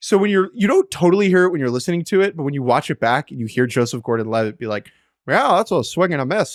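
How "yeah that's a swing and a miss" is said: play-by-play baseball announcer delivery. Act out a movie's dubbed baseball commentary, as Joseph Gordon-Levitt doing a broadcaster voice. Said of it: "He's like doing a broadcaster voice".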